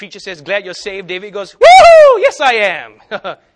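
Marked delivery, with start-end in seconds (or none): 1.5-3.4 put-on very high, very loud, drawn-out elated whoop. Acting out the reply to a preacher saying glad you're saved, a joyful whoop. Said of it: "He's super happy".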